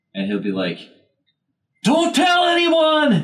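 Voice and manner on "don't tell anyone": high, slow, loud yelling like a deaf man. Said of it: "so he yells everything".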